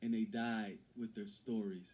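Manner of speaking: ordinary talk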